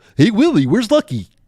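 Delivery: high-pitched puppet voice. Speaker boasts of being a great voice actor and shows off an Alf impression. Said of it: "I can do Alf".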